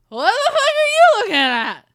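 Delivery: put-on shrill, very loud, high drunken shout. Telling about getting looks, speaker voices a drunk person who comes out, imitating a drunk person. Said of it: "a drunk person comes out".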